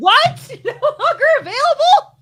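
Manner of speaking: very high, shrill, frustrated shouting. On stream, trying to buy tickets that turn out to be unavailable, yelling. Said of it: "yelling on the stream".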